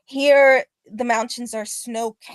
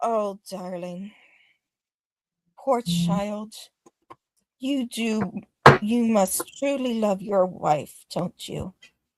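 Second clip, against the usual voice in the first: tender, gentle, soft speaking voice; 3 dB quieter than usual. Voicing a voice, distinct from the Raven Queen's, heard reflecting on undeath, gentler voice. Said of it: "This is gentler".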